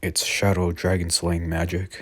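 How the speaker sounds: ordinary delivery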